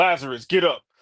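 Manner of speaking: stern, no-nonsense, commanding fatherly voice. Speaker imagines him raising Lazarus, in a put-on dad voice. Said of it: "turn on his dad voice".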